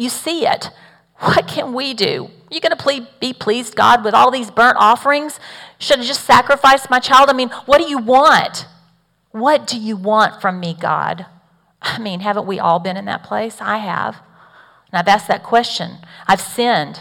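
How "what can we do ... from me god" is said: put-on bitter, resentful sarcastic tone. Acting out the people's answer to god: imitating sarcastic bitter complaint. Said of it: "The people responded to God with sarcasm".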